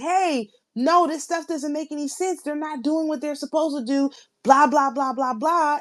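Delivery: put-on shouted, held back, mild, contained yell. Telling a story about Jupiter, imitating screaming. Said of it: "screaming out like".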